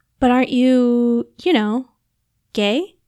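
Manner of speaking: sheepish, embarrassed tone. Narrating a tipsy woman asking a man a question, embarrassed. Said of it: "Her cheeks heated again with embarrassment".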